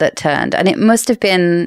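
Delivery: ordinary delivery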